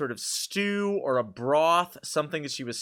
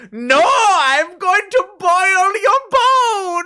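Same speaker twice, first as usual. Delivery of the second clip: very high, slow, menacing storybook witch voice; 13 dB louder than usual. Retelling how mom scared a small child while stirring: imitating mom playing a witch. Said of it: "But Yanni is like".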